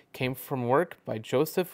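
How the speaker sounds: plain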